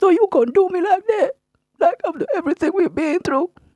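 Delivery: sobbing, tearful, high-pitched crying voice. Retelling what a crying man said when told to leave; imitating someone crying. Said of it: "He started crying".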